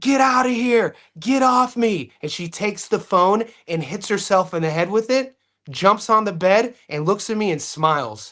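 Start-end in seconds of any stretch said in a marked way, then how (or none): 0.0-2.1 put-on high-pitched screaming, held back. Retelling how she grabbed a phone and started screaming: imitating someone screaming. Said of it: "She starts screaming and says".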